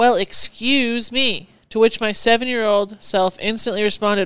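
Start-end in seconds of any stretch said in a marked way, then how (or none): 0.0-1.5 snide, sarcastic, accusing tone. Retelling how a woman the speaker bumped in line reacted, mimicking her sarcastic accusing voice. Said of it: "in her most sarcastic and accusing voice".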